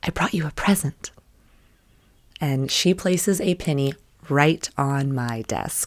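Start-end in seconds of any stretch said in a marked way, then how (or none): 0.0-1.1 put-on soft little girl's whisper. Retelling how a little girl leaned close at the desk: imitating a child whispering. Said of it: "and whispers".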